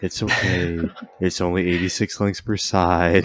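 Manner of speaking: put-on soothing, calming voice. Pitching a hotline where Greg gets on the call, imitating Greg's soothing tone. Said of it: "he speaks to you with like a nice soothing tone".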